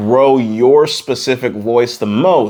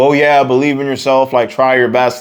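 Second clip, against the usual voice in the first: ordinary talk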